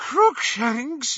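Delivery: put-on high, out-of-breath wheezing. Hermione, catching up with Ron, answers his question: wheezing. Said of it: "wheezed Hermione".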